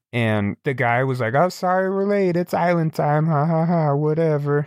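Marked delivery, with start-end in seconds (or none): 1.3-4.6 high, pitched-up voice of a heavy pot smoker. Retelling what the late boat guy said at the ramp, stoner voice. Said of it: "just sounds like he's been smoking weed".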